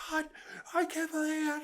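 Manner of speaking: play-acted very high, shrill, full-lungs shriek. Retelling a wife screaming at her husband: imitating a woman yelling. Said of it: "she's just really at the top of her lungs".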